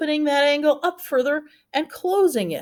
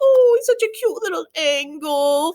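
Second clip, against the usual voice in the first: put-on baby voice, "angle" drawn out; 3 semitones higher than usual. Teaching a memory trick for acute angles: baby voice. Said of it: "with that kind of that baby voice".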